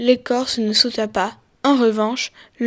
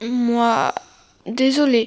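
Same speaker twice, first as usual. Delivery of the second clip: halting, forced, barely managing to speak. Narrator reads the boy's apology after the viper's outburst, struggling to get words out. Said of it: "parvint enfin à articuler le garçon".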